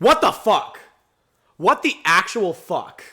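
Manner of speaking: furious, very loud, high-pitched outburst. Reacting to something that keeps happening to them on video, angry. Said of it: "I'm so mad right now".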